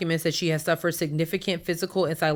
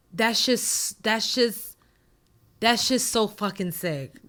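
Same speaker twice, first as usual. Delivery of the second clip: holding back emotion, fighting it, higher pitch; 4 semitones higher than usual. Reacting to an assault lawsuit report, holding back emotion. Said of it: "I'm trying not to get emotional".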